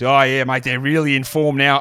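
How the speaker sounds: mock sports commentator announcer voice. Mocking how a sports commentator talks about a team: imitating a sports commentator. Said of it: "I hate when a sports announcer, sports commentator, um, talks about a team and goes".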